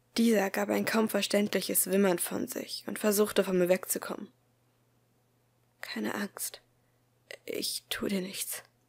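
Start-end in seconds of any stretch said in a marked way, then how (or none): 5.8-8.6 soft, shaky, trembling whisper. Speaking to a whimpering little boy who tries to get away, whispered, voice trembling slightly. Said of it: "wisperte ich. Meine Stimme zitterte leicht".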